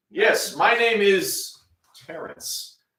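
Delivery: mechanical, machine-generated robotic computer voice. Asked for his name, answering like a computer generating a name. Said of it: "say that like a computer automatically generating a name".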